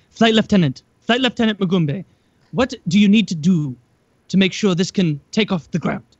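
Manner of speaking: put-on South African accent, odd pacing. Retelling a video, quoting a reporter questioning a man, in a south african accent. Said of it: "he had like the South African accent".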